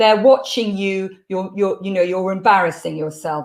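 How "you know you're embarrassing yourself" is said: normal talking voice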